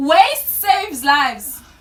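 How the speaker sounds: full-throated, loud shouting. Giving a best guess in a word-guessing game, shouting. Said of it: "she's shouting".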